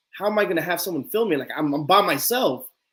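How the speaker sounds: plain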